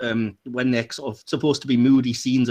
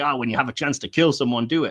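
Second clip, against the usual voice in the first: put-on cocky, swaggering tone of voice. Retelling a movie scene where a henchman climbs onto a table: imitating a cocky henchman. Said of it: "getting all cocky".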